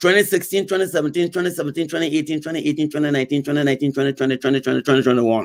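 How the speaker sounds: very fast, rapid-fire, rattled-off reading. A speaker reads the years off a revenue chart, reading very fast. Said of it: "I'm sorry to read so fast".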